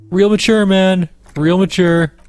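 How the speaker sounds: very high, shrill, whining yell. A voice shouts after the party escaping without paying: whiny shout. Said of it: "you hear a whiny voice".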